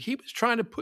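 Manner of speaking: high, offhand, nonchalant delivery. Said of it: "if she just nonchalantly".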